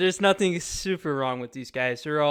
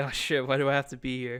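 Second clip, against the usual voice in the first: ordinary talk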